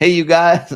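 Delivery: put-on southern American drawl, loud and high-pitched. Speaker trying out an American accent, addressing the group: put-on American accent. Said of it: "I'm gonna get in trouble for my American accent".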